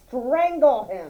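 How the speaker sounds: ordinary delivery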